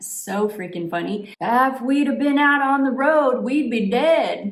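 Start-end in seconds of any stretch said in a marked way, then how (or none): 1.4-4.5 put-on thick Southern accent, raised and high-pitched. Retelling what a grumpy older man said, in his thick southern accent. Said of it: "in his thick southern accent".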